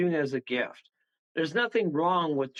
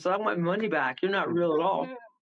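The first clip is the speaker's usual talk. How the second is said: ordinary delivery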